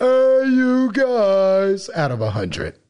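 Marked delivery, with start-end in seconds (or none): 0.0-1.9 high, slow mock yell. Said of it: "and yelling".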